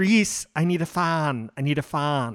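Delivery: slow, stretched-out put-on British accent. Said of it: "she's saying it in, like, a British accent".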